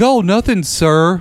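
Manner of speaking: mock, suddenly well-mannered, high, innocent politeness. Retelling the man answering the parents: imitating a suddenly polite man. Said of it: "he turns into Mister, like, fucking good".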